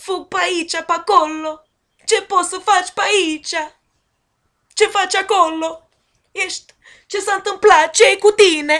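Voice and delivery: Romanian made to sound Italian. Showing how Romanian can be made to sound Italian: Romanian made to sound Italian. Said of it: "Take some Romanian and make it sound Italian".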